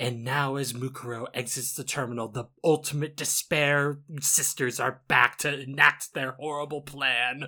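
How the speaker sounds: grand, theatrical stage narrator voice. Describing how a Danganronpa performance makes her sound: narrator at a play voice. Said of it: "like a narrator at a play".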